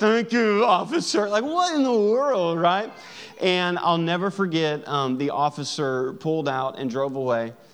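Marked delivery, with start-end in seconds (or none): 0.0-1.3 mock speech through gritted teeth, much higher. Acting out what drivers say to an officer giving a ticket, through gritted teeth. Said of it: "through gritted teeth".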